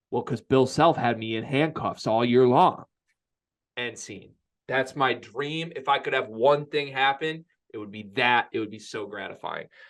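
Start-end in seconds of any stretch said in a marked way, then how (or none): 0.1-2.8 put-on deadpan, dry delivery. Acting out an imagined reply about handcuffs: imitating deadpan Jim Halpert style. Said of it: "he looks like deadpan Jim Halpert style".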